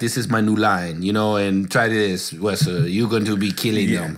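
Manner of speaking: low, smooth, put-on Italian accent. Imagining someone pitching a new clothing line to Wesley: imitating an Italian accent. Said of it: "with an Italian accent and was like".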